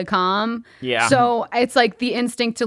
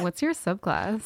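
flirty come-on delivery; 8 dB quieter than usual. Retelling how another player asked a question: imitating someone flirting. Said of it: "it sounded like you were hitting on someone".

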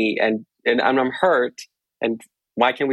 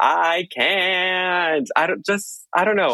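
put-on shrill outburst, much higher pitch; 8 semitones higher than usual. Recounting how a woman got up from the table, imitating her shrilling. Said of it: "she was just like shrilling".

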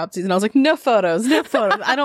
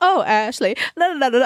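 fake sophisticated high-society accent, la-la tone; 4 semitones higher than usual. Retelling being told at a bar to act sophisticated, put-on sophisticated accent. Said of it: "I started talking in my accent".

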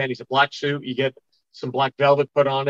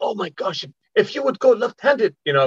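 bad put-on Japanese accent, pitched up; 7 semitones higher than usual. Retelling what japanese people said on a band trip, the speaker uses a bad japanese accent. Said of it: "bad Japanese accent there".

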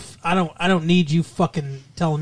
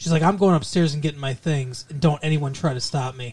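normal talking voice

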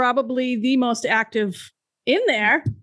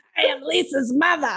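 put-on cartoon mom character voice; 3 semitones higher than usual. Repeating another speaker's line about her mother: Roz from Monsters, Inc voice. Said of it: "Roz from Monsters, Inc".

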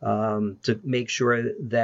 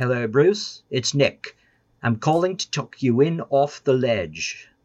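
put-on British accent, phone-voice manner; 2 semitones higher, 4 dB louder than usual. Retelling an early-morning phone call from London, imitating Nick's British voice. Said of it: "it was that British voice".

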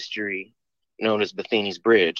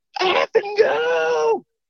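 put-on frantic screaming, high, rough and drawn out; 3 dB louder than usual. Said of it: "screaming at the top of his lungs".

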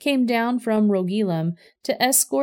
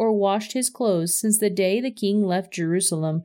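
ordinary delivery

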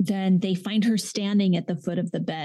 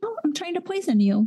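very high-pitched, offhand, casual, breezy nonchalance; 10 semitones higher than usual. Retelling a child admitting to poisoning: imitating a nonchalant tone. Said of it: "Just nonchalant".

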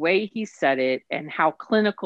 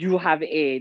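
horrible put-on German accent. Retelling what a doctor said on entering his room, in a horrible German accent. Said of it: "in this horrible German accent".

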